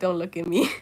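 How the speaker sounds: mock sullen, moody, sulky pet voice. Voicing a pet who hides her head down: put-on moody voice. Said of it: "Petra looks so moody all of a sudden".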